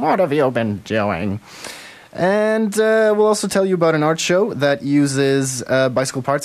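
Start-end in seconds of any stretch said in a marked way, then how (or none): 0.0-1.4 put-on crabby, grumpy voice. Host asking a guest what she's been doing with her Fringe show, in a cranky mother voice. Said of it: "That's my cranky mother, Fringe mother voice".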